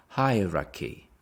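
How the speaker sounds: hierarchy said slowly, stress on first syllable. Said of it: "The stress is on the first one".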